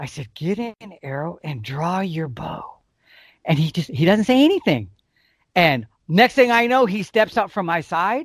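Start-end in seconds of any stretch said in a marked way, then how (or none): 0.3-2.8 slow, hushed half-whisper under the breath. Retelling speaking to a son while at full draw: imitating own half-whisper. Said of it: "I kinda whisper to my son".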